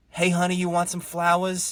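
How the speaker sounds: put-on New York Long Island accent. Retelling a woman offering her flowers, heavy Long Island accent. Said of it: "heavy Long Island accent".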